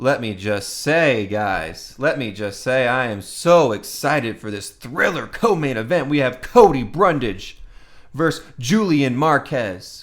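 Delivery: loud, sarcastic, put-on enthusiasm and excitement. Announcing the co-main event fighters, the speaker feigns excitement with sarcasm. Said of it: "can't sense my sarcasm".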